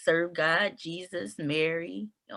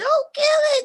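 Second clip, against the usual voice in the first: screamed out, pitched very high; 10 dB louder than usual. Retelling telling a son not to kill a spider: retelling own screaming. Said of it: "I would start screaming".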